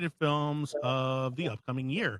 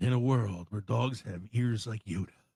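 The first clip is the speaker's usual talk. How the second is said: movie trailer announcer voice, lower; 4 semitones lower than usual. Doing a bit about the guy that does the trailers, in movie trailer narrator voice. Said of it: "the guy that does the trailers".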